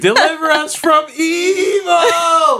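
shrill, booming, very high and loud, "evil" stretched out. Quoting a reviewer's reaction to a movie's dance scene, in a Mermaid Man voice. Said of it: "why did you sound like um, Mermaid Man just now?".

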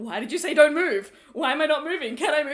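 play-acted very loud, high, panicked rapid-fire speech. Retelling her questions during a word game: imitating someone panicking. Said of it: "panicked, being like".

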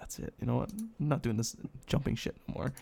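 beaten-down, defeated, breathy half-whisper. Voicing a drenched character giving up on jumping: defeated. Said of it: "you're so defeated at this point".

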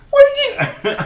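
very high-pitched, squeaky yelp or squeal. Acting out a character's reaction to a found safe key: high-pitched squeaky voice. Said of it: "getting all high pitched and squeaking like".

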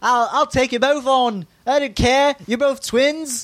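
rough attempted Irish accent. Acting out what a woman said to two people, then asking if it sounds right, attempted irish accent. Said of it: "Does that sound like Irish?".

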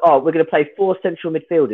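usual speaking voice

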